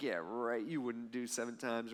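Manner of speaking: mock dismissive, unconvinced, soft scoffing disbelief. Retelling how the disciples roll their eyes at Peter: imitating eye-rolling disciples. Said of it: "they probably roll their eyes a little bit like".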